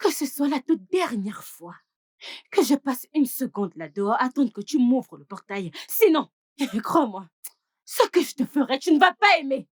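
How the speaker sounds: furious, angry, threatening scolding tone. Character scolding another, who then urges calm, worked up and angry. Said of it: "essaie de te calmer".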